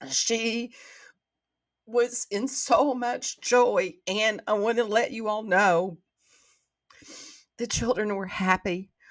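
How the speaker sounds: crying, tearful, breaking voice. Speaking to listeners, the speaker is crying. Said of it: "I don't know why I'm crying".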